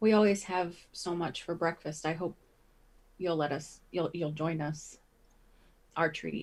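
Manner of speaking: gentle, friendly, soft and kind voice. Offering breakfast to a guest at the table, in a quiet, kind tone. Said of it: "say call like quietly and and in a nice tone".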